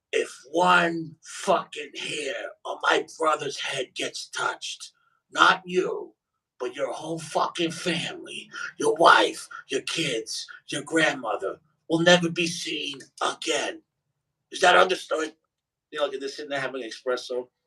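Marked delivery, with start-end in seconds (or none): 0.1-15.3 slow, hoarse, raspy smoker's rasp. Retelling the aunt threatening a man, in her raspy cigarette voice. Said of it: "she has a raspy cigarette voice".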